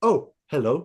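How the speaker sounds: put-on, mimicked English accent. Recall him showing people around the set in the documentary, imitating his english accent. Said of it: "his English accent was coming out".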